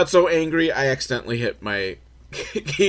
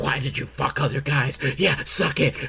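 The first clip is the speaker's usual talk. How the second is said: mock whisper, quieter; 4 dB quieter than usual. Speaker retelling what a man said during sex, imitating his whispering. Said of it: "He's like whispering throughout the whole thing".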